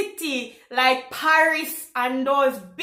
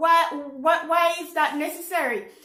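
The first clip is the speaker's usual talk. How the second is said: ordinary delivery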